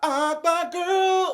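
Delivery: shrill, very loud, high, sassy belted delivery. Addressing Akbar V, doing a Kaya voice. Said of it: "in my Kaya voice".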